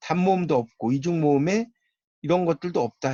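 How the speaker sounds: ordinary talk, nothing marked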